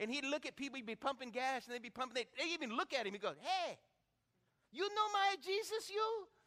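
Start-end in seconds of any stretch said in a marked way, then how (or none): 3.4-6.2 halting, slow, pitched-up broken English. Speaker imitates a man greeting people at a gas station, broken English. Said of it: "he's speaking broken English".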